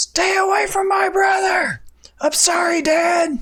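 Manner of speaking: very high, furious, angry female dragon voice. Voicing a dragon that comes over the hill looking mad: angry female dragon voice. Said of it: "And it's a female voice".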